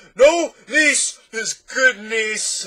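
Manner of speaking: shrill, slow, booming roar through laughter. A narrator reads the din interrupting the doctor again, roaring with laughter. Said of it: "Roared the din again with a laugh".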